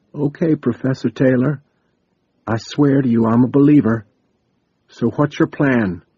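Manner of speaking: hushed whisper over radio. Narrator reads a character speaking over the radio to a professor: whispering over the radio. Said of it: "D J's voice whispered across the radio".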